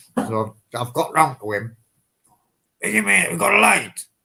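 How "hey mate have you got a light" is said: silly, high, rough, funny disguised voice. Speaker retells masking up and asking a man for a light in a put-on funny voice. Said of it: "put a funny voice on".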